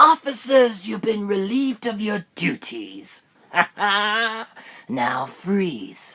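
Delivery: so-so ventriloquist dummy voice. A speaker imitates how someone talks: not-great impression. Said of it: "Not that great".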